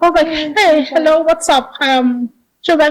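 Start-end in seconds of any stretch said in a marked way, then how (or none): 0.6-1.7 put-on speaking English in a Nigerian accent. Retelling a phone call to a colleague: Nigerian accent. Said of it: "I've won back my Nigerian accent".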